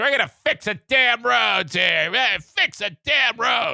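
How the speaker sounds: sassy, snarky tone. Retelling how Whitmer promised to fix the roads: imitating Whitmer's snarky attitude. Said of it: "that snarky attitude".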